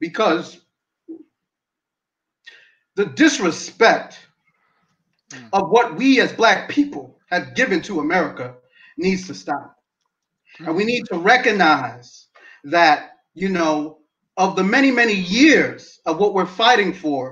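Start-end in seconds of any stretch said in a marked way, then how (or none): 0.0-9.8 voice near tears, holding back, keeping it together. In a conversation, saying they love america, trying not to tear up. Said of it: "I'm trying not to tear up".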